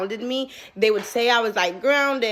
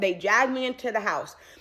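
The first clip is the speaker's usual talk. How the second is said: ordinary delivery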